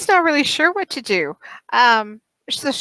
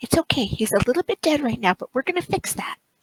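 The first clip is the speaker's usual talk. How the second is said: soft, hushed whisper under the breath; 3 semitones lower, 5 dB quieter than usual. Voicing a character comforting a nervous cat: whispering. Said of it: "Faerun will whisper to Jinxie".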